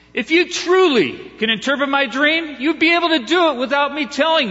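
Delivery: angry, enraged voice. Reading a story, the king answers the wise man: angry furious king. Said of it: "the king got so angry and furious".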